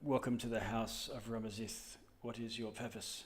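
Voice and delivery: low, deep, solemn, soft-spoken voice. Voicing the greeting at the house of ramazith, sort of deep voice. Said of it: "it just says in a sort of deep voice".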